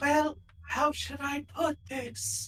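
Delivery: very breathy voice. Speaking as Jess when it is her turn; extra breathy Jess voice. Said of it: "extra breathy".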